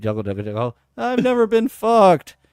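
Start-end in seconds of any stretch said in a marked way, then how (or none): 1.0-2.3 tearful, pitched-up crying voice. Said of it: "she's crying".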